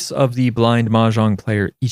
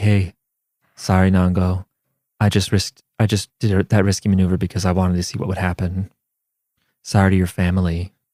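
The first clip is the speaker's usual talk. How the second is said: put-on calm voice, slower; 4 semitones lower than usual. Discussing Akagi, the speaker imagines him talking to Nango: calm Akagi impression. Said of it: "he has a calm voice".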